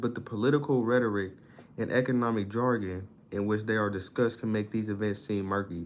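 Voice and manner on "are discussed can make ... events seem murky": ordinary talk, nothing marked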